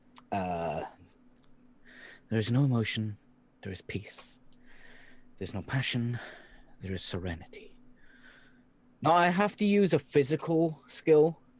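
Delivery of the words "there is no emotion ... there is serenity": quiet muttering under the breath. A player's character repeats words while concentrating on the force, muttered under the breath. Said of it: "constantly under my breath repeating".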